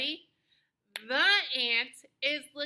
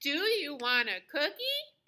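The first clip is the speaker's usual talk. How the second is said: pitch lifts upward on the word cookie. Speaker demonstrating the question-mark gesture to listeners, rising question intonation. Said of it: "watch me do the whole sentence for a question mark".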